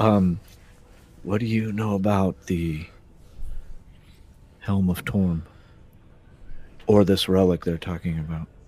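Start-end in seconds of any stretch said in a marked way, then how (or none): 1.2-8.5 whispered aside. Asking a shield over the shoulder about a relic, whispering. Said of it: "whisper to".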